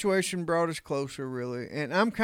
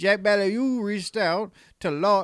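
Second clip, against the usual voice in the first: put-on Louisiana Cajun accent, higher and louder; 4 semitones higher, 4 dB louder than usual. Reading a news story aloud in a Justin Wilson Cajun accent. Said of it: "I'm gonna read it all in the Bayou".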